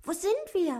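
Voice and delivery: very high, agitated and excited. Dwarf Otto crawls out from under the little duck's wing and asks, excited and agitated. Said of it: "fragte aufgeregt".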